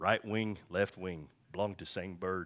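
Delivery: put-on elderly voice.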